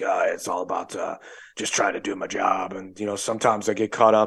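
deep, gargly impression voice. Retelling a movie scene where he essentially apologizes to Eddie Murphy, deep, gargly Nick Nolte voice. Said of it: "Nick Nolte's got that deep, gargly voice".

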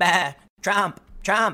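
put-on bleating like sheep. Mocking a yelling audience: imitating a crowd bleating like sheep. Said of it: "bleating like sheep".

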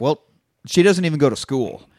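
plain

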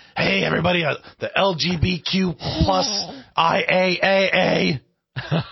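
put-on smoky, rough voice. Imitating a woman's way of talking, with roughness and a smoky voice. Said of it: "The way she talk".

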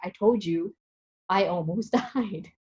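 slow words squeezed out between hard laughs. Retelling the near fall in the shower, quoting him, retelling laughing while talking. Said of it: "he was laughing so hard when he's like".

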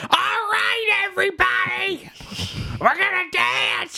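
very high, over-enthused, eager, with "right" stretched out. Retelling a movie scene with an over-enthused Gilbert Gottfried impression. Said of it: "cuts this shot of Gottfried going".

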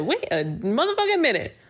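sassy, high-pitched and fast delivery.

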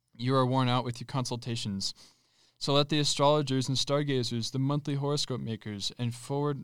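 ordinary talk, nothing marked

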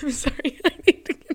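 high-pitched, teary laughter mixed with crying. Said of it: "I'm, like, laughing and I'm crying".

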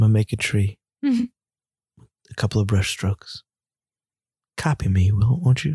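calm, low voice with swooping pitch. Joking about a calm, serene painting: Bob Ross impression. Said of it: "Bob Rossy kind of paintings".

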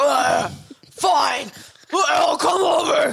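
mock, very high, drawn-out, creaky, grumpy grumble. Mocking how a sibling answers when just woken: imitating David grumpy after waking. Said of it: "the amount of anger he has".

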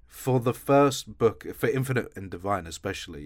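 plain

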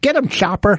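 lisping small cartoon bird voice. Showing what kind of voices they do: little bird voice with a lisp. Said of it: "the little bird, uh, that was, uh, with the dog... with the lisp".

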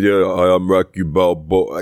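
way down low, deep, slow, dragged-out, low-pitched voice. Imitating how Rocky Balboa said his line in a commercial: barely audible Rocky Balboa voice. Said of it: "His voice was so low".

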